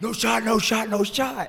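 high-pitched, repeated scream. Retelling a game's final seconds, imitating someone screaming at a player. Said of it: "I'm screaming at Nick".

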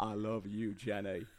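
put-on slow southern accent. Doing an accent that turns into a Forrest Gump impression. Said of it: "I always end up going to Forrest Gump".

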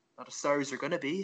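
expressionless deadpan, nothing in the voice. Retelling own reply when someone says sorry for no reason: retelling a deadpan reply. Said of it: "I just look at them deadpan in the eye".

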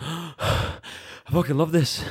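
winded, gasping, very high, drawn-out breathless delivery. Retelling what the winner said after a tough first round: imitating someone out of breath. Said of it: "out of breath".

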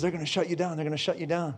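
hushed, close half-whisper. Retelling a connection's warning half-whispered in the ear: imitating a half-whisper. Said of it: "whisper in my ear and says".

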